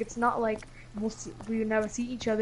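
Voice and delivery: ordinary talk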